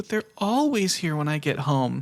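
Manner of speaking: imitated tearful child voice. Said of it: "she's, like, welling up".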